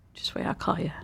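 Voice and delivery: playfully fake threatening tone. Promising to call someone about a weird pet: mock menacing tone. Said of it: "That sounded so menacing".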